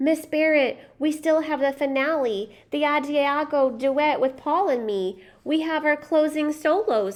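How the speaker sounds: high, begging, imploring, pleading voice. Reading a story where the narrator begs the ballet teacher: pleading. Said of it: "I pleaded".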